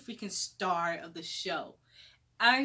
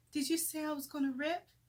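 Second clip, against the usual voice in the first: put-on frightened, vulnerable voice, high and rushed; 7 semitones higher, 3 dB quieter than usual. Speaker retells asking the doctor a question, in a put-on scared, vulnerable voice. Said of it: "in my scared, vulnerable voice".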